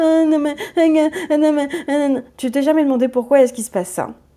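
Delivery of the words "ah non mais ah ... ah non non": put-on high, blubbering, sobbing child's voice with stammer. Showing how a crying child tries to talk: imitating a crying child. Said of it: "quand un enfant est triste et qu'il pleure ... il est en mode".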